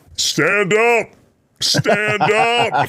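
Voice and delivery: very high, very slow, drawn-out delivery. Retelling what Brandon would say to someone: imitating Brandon. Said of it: "I just see Brandon go".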